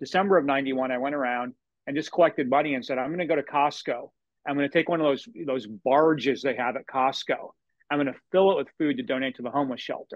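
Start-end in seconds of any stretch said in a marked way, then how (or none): none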